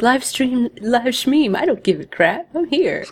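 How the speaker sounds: carefree, dismissive tone. Imitating a friend who doesn't care about the live stream. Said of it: "He's like".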